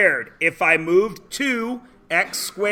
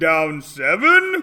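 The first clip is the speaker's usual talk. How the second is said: scary, spooky, creepy put-on voice; 5 semitones lower than usual. A speaker announces a voice for the next question, then uses a scary voice. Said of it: "Now I'm going to do a scary voice".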